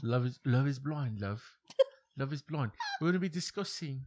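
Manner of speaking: clumsy, bad, put-on British accent. Trying out accents while talking with another speaker, a bad UK accent. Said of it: "U K accent".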